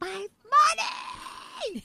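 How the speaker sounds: very high, shrill crying and screaming wail. Retelling a childhood fight over money: imitating screaming and crying. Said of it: "I'm screaming and crying. I'm like".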